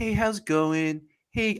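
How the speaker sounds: very slow, unhurried, easygoing, relaxed drawl. Imitating how Bosa talks: Bosa impression, talking very slowly. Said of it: "talk very slowly".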